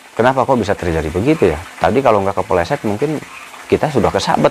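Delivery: ordinary delivery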